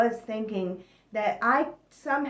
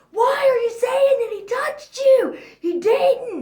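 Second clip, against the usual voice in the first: very loud, high, furious confrontational yelling; 13 semitones higher, 9 dB louder than usual. Retelling how she yelled at her oldest daughter: retelling her own yelling. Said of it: "I would just yell in her face".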